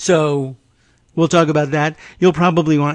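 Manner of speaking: put-on rambling, blathering delivery.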